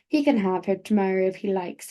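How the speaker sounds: plain reading voice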